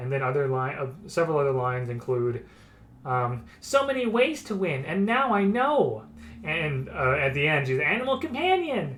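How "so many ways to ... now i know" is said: put-on high, young-sounding voice. Quoting the character's lines while describing her, in a Kaya voice. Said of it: "make a convincing Kaya voice".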